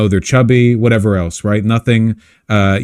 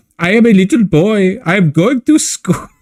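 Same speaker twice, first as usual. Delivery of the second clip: put-on comic German accent, high; 10 semitones higher than usual. Speaker mocking an accent that sounds German to him, comedy German accent. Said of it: "It's like a comedy accent to me".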